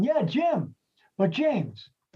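high, stretched-out, sing-song yelled call. Retelling calling down the bar to a couple: retelling a yell. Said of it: "I yelled down".

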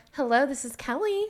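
put-on polite phone voice, high-pitched. Showing how she answers the phone to a client, fake phone voice. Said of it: "a fake voice".

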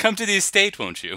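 very high, loud, fancy put-on brogue. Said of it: "They speak with a brogue there".

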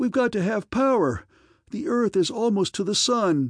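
high, begging, imploring pleading cry. A narrator reads a character's line aboard a ship that has lost power: pleading. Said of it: "the pleading voice of Kel Aaron".

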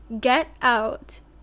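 put-on demonic shout. Telling a haunting story, retelling a demonic yell at the priest. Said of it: "a demonic voice yelled".

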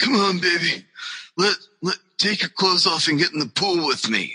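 mock stoned voice. Retelling Sean Waltman showing up at a house: imitating high Sean Waltman. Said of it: "high as kite, being like".

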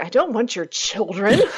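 play-acted, high, grossed-out, offended tone. Retelling a killer's reply to a man offering his children: imitating someone disgusted. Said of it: "So disgusted".

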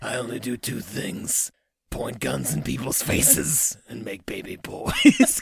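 low, deep, slow, deliberate voice. Retrying the joke about guns and baby boys: Clint Eastwood voice. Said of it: "I could have, like".

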